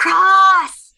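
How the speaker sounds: high, stretched-out, drawn-out whisper-yell. Calling for a lost companion in the woods: whisper-yell. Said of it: "whisper yell".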